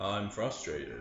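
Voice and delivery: stiff, mechanical, robot-like voice. Recalling how own line sounded on the recording: imitating own robotic delivery. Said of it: "it was really robotic".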